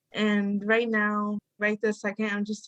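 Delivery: plain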